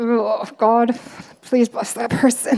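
through clenched teeth. Speaker shows how you might first pray for someone who hurt you, through clenched teeth. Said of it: "you might do it through clenched teeth at first".

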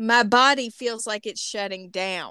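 ordinary talk, nothing marked

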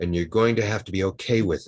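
ordinary talk

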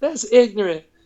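high cartoonish voice. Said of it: "Is that your South Park impersonation?".

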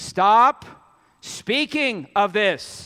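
loud, commanding voice of authority. Retelling the gospel story, the speaker voices Jesus ordering the crowd, in an authoritative command. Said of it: "He has to go to his authoritative voice".

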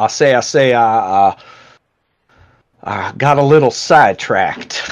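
loud, slow cartoon voice. Voicing Bull as he pops up at a window: Foghorn Leghorn voice. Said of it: "that's my best Foghorn Leghorn".

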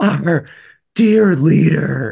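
sobbing, high, loud bawling newscaster-style voice. Acting out a North Korean newscaster announcing sad news about the leader, imitating her bawling. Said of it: "and just bawling, crying".

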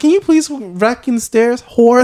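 put-on polite, sweet old Southern lady. Imitating how a woman talks in her head, as a sweet old Southern lady.

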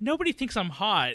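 high, tearful, sobbed-out complaint. Retelling a movie scene where a character complains to the crew: imitating someone crying. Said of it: "crying to all the".

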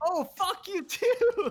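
put-on cheerful tone. Retelling a man on scaffolding answering people who cursed at him, mock-cheerful comeback. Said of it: "said it with like the most like cheerful tone ever".

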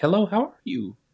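very high, sugary, sweet telephone voice. Describing how a woman changes her voice on the phone, in a put-on phone voice. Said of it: "and then pick up her phone and be like".

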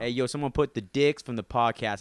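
poor put-on New Jersey accent. Imagining a listener calling out the podcast hosts, in a horrible Jersey accent. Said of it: "That was the horrible Jersey accent".

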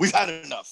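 ordinary talk, nothing marked

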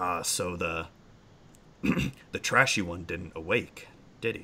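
deep, low-register humanoid creature voice. A storyteller voices a humanoid figure speaking to the stirring group, low character voice. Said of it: "kind of low voice".

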